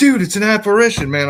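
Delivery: very high, loud, freaked-out panicked outburst. Speaker retells spotting a floating thing on the camera view, acting out own past freak-out. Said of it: "I start freaking out".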